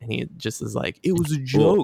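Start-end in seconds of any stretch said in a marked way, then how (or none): 1.0-1.8 macho agent voice, higher. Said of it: "Chad F B I agent voice".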